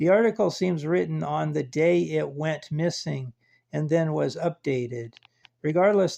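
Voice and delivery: ordinary delivery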